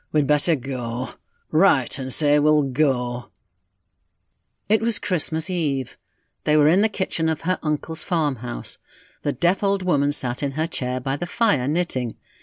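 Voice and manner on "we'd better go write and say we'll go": slow, reluctant, grudging grumble. A man gives in at last, answering a woman's silence: grumbling. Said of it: "He began to grumble".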